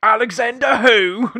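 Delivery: put-on very loud, high-pitched shout in Cockney accent. Quoting the character's reaction in a film: Michael Caine Cockney impression. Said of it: "you need to stick with that accent".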